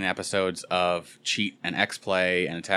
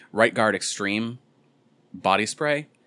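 normal talking voice

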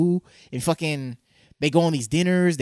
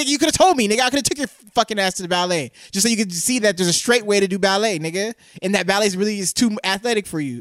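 play-acted, pitched-up scolding yell; 5 semitones higher than usual. Acting out a talk with an imagined son: acted yelling at his son. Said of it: "'cause I'm yelling at him like".

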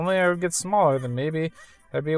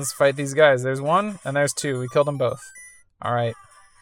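ordinary talk, nothing marked

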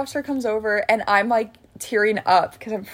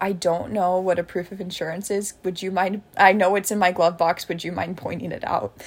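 normal talking voice

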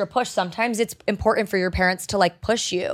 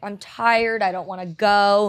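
slow, tearful, sobbing, crying complaint. Retelling being made to go to gymnastics practice: imitating own past crying. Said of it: "crying and being like".

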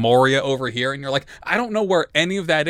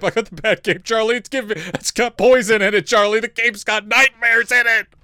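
put-on screaming character voice, higher pitch; 8 semitones higher, 3 dB louder than usual. Acting out a book character begging for his cloak back: imitating Gabriel screaming. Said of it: "Gabriel just starts fucking screaming".

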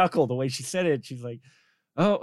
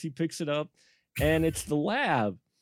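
ordinary talk, nothing marked

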